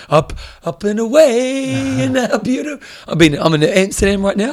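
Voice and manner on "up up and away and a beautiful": fake stoned voice, higher pitch. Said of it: "you're probably pretty stoned right now".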